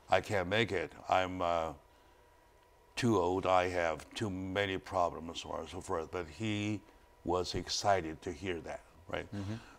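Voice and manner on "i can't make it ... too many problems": very weak, faint, strengthless voice. Retelling what he said when he called back, imitating a very weak tone. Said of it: "with a very, very weak tone".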